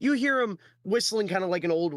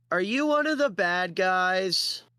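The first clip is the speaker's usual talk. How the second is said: put-on slow little girl voice, guys drawn out; 4 semitones higher than usual. Voicing a little girl who tugs a cloak: little girl voice. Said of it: "a little girl, ... she goes".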